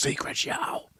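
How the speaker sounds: dreading tone. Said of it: "Say that like it's a punishment".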